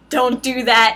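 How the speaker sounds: put-on pleading voice. Retelling an anime scene, imitating Diablo pleading. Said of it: "you got Diablo pleading".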